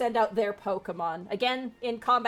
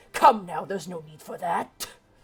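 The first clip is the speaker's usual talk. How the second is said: snarling, growling creature voice, like a dog; 3 semitones lower, 4 dB louder than usual. A game master voicing the Houndour as it dodges an attack, snarling Houndour voice. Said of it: "snarls at you and goes".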